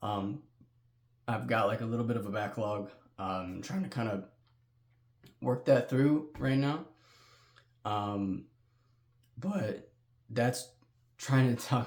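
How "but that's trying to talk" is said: voice cracking and breaking mid-phrase. Giving channel viewers an update: voice cracking. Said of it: "Excuse my voice crack".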